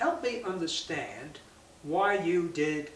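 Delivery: slow, gentle, non-accusatory tone. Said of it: "That's a nice way of asking a question".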